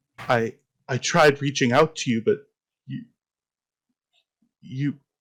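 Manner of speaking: faltering voice, breaking off, fading mid-sentence. As a disembodied voice speaking to the listener, voice trailing away. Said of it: "the voice sort of trails away".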